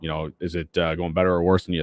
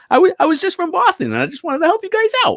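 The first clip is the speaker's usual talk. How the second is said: very high, swooping, pitch-swinging put-on voice. Answering a comparison to Mark Wahlberg: Mark Wahlberg impression. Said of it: "that's my, uh, impression".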